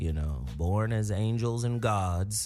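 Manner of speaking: low, grand, proud fatherly pronouncing voice. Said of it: "Now you sound like my father".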